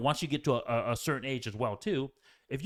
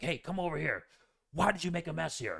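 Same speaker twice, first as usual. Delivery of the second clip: put-on harsh, scolding tone; 3 semitones higher, 4 dB quieter than usual. Imitating a father calling his son over, imitating a harsh tone. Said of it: "they'll call you over in a harsh tone".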